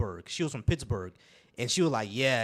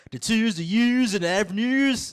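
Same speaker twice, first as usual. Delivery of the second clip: pitched-up, stretched, drawn-out Baltimore accent; 10 semitones higher, 7 dB louder than usual. Speaker demonstrates how people from Baltimore say words, Baltimore accent. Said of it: "You mean the Baltimore accent?".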